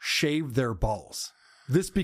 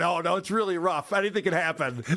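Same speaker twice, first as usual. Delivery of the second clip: naive, earnest, clueless tone; 3 semitones higher than usual. Mocking what John said about scratching: imitating John. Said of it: "And John's going".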